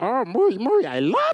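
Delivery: loud, high, swooping, goofy alien voice. Retelling what he told his young son, in a Jar Jar Binks voice. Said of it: "because I do that voice".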